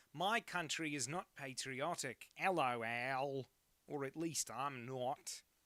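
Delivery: bad put-on Australian accent, slow. Speaker pauses to read a message aloud, in an offensive australian accent. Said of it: "Let me read this in the offensive Australian accent".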